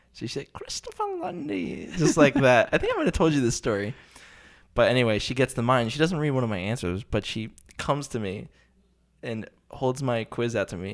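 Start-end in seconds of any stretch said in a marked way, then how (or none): 0.5-1.9 put-on high-pitched, soft, hushed English accent. Recalling how a woman used to say his full name, in an english accent. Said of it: "She had an, an English accent".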